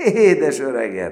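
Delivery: very loud, joyful shouting. Narrator reads the first-person character greeting the newcomer in the next bed, shouting. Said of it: "kiabáltam".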